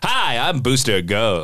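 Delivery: corny television presenter voice. Demonstrating how the speaker's own Booster Gold sounds: Booster Gold voice. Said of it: "so you think my Booster Gold is like".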